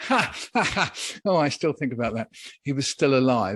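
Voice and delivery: speaking through bursts of laughter. Recounting a man's diary entry, the speaker comments on it, laughing while speaking. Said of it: "I'm only laughing because".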